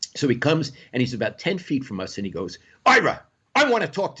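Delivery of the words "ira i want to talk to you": put-on bossy, angry voice with raised pitch. Retelling how an angry Jerry called out to Ira: imitating angry Jerry. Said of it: "like that".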